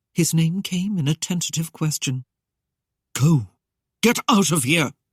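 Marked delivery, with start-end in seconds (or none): 3.2-4.9 authoritative, firm, commanding voice. Reading a cloaked figure ordering a woman to leave: commanding. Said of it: "he commanded".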